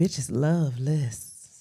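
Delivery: sexy voice. Asked to say it one more time and make it real sexy: sexy voice. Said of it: "make it real sexy".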